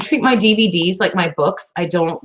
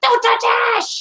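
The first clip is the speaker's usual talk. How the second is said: very high, shouted mock scream. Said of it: "I will scream from the second, from the first floor and shout".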